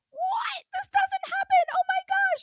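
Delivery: very high, stretched-out, drawn-out shriek. Retelling the other speaker's slot win reaction: imitating someone screaming. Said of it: "Carlin, you're screaming".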